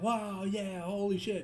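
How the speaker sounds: excited hushed voice. Showing how they will get hyped without getting loud: hyped but in inside voice. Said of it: "use our inside voice".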